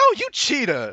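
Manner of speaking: cartoon talking donkey sidekick voice. Acting out what Cavassier said about the lies, in a Donkey from Shrek voice. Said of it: "you sound like the donkey from Shrek".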